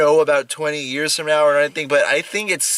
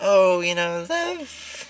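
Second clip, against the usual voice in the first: very slow, drawn-out, every word stretched; 4 semitones higher, 5 dB quieter than usual. Describing an expected movie character, imitating Mary Margaret. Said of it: "I thought she was just gonna be Mary Margaret".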